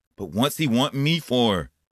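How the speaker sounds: insistent, demanding. Told to leave town before a meeting, a young man replies, demanding. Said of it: "demanded Duane".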